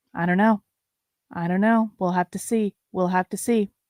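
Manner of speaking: soft whispering voice. Trying out a whisper voice instead of a normal voice: whispering. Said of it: "best whisper voice".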